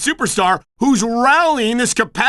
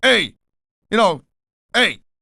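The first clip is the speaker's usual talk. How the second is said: put-on Canadian accent on the word "hey"; 2 semitones lower than usual. Teasing the other speaker for saying hey, mock canadian 'hey'. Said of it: "like the Canadians, they always go".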